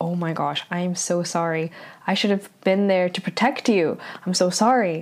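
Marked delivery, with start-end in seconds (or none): none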